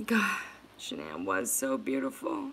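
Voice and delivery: overcome with emotion, choked up, with swooping pitch. Talking to viewers about a family they love, getting emotional. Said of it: "I just got emotional".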